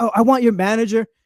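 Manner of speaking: irate, angry yelling. Retelling an argument with a customer at work: imitating a customer yelling. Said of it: "And she's just yelling at me".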